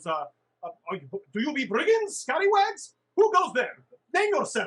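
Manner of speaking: high, swooping, halting tiny gnome voice. Narrator voicing a gnome the players meet, little gnome voice. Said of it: "the little like gnome guy goes".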